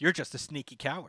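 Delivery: normal talking voice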